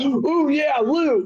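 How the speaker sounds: very high-pitched voice. Imitating the horse guy finding a spear after a fight: imitating the horse guy. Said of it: "he goes".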